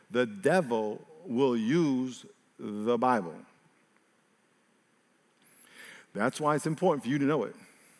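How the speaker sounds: deliberate word by word, very hushed, really slow. Repeating the previous sentence again for emphasis, really slow. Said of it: "I'm going to say that again really slow".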